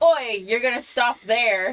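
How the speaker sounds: intimidating, loud, high, in-character shouted yell. Playing a character who orders a group to stop: yelling in character. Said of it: "I'll yell".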